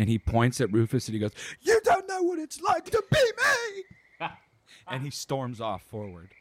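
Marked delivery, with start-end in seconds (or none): 1.6-4.3 lump-in-throat voice, pitched much higher. Game narrator voicing Grib pointing at Rufus; Grib holding back tears. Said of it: "trying to not cry and you hear that lump in".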